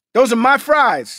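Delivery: play-acted loud, riled-up, worked-up angry outburst. Talking about someone eating your fries, riled up. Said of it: "It sounds like you got riled up just now".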